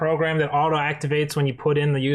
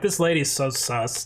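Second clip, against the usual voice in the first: ordinary talk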